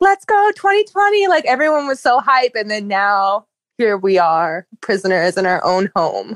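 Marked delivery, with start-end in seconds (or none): 0.0-1.3 very high, excited, hyped screaming cheer. Remembering New Year's, speaker acts out her best friend, imitating friend screaming. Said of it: "she was like screaming".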